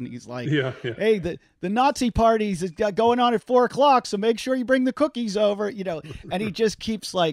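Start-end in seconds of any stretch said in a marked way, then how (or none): 0.8-5.7 loud, high-pitched hollering yell. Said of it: "yelling across the yard".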